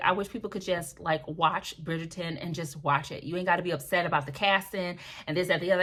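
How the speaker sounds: ordinary delivery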